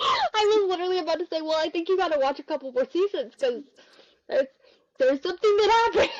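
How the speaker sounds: high, loud, excited squeal.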